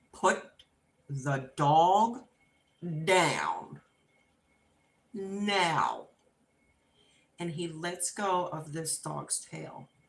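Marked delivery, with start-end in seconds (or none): 0.1-6.0 acted stern mother voice, very slow, firm, raised. A parent retelling what she told her child Joseph about the dog: retelling a stern command. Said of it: "in that very stern voice".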